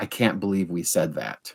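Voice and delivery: put-on very serious delivery. Telling how a man reacted after hearing a quote: retelling a very serious remark. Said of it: "he said very seriously".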